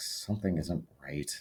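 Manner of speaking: very quiet, barely audible whisper. Player voicing their character, speaking to the group: very quiet whisper. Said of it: "whispers very quietly to the group".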